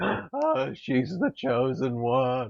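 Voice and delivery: play-acted slow, reverent, worshipful, adoring awe. Retelling a stage bit where a man worships a photo: imitating worshipful awe. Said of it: "worshipping a giant photo of Hillary Clinton".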